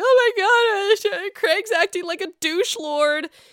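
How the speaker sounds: very high, blubbering, crying whine, sob-talk. Predicting how Paige will react to Craig, imitating Paige crying. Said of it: "Paige is crying like".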